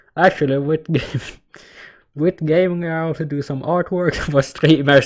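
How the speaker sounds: talking through laughter. Reading out a message about artwork for streamers, laughing while talking. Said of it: "Stop laughing".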